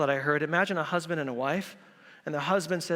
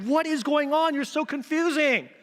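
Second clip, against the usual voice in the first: put-on, really angry voice, higher and louder; 11 semitones higher, 4 dB louder than usual. Retelling how a wife reacts after her husband goes: imitating a really mad wife. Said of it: "his wife is really mad that he went".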